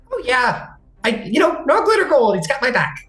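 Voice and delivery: squeaky, very high-pitched voice. The Chaplain reassures the others before they part, in a squeaky voice. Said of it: "the squeaky voice of Chaplin".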